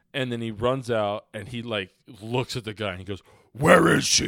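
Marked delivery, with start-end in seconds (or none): 3.5-4.3 very loud, high-pitched, full-throated yell. Retelling how he yelled at the guy: Batman impression. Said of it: "like the perfect Batman impression ever".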